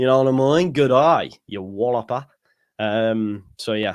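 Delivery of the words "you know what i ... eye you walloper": stock put-on Australian accent throughout. Admitting he defaults to it, the host demonstrates an australian accent. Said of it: "would automatically go to an Australian accent".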